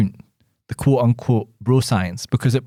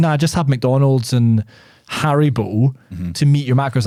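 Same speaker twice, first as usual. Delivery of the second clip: ordinary delivery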